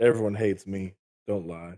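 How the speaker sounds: downcast, low-spirited. Podcast co-host, just introduced by the host, answers: sounding down. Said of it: "you sound so down".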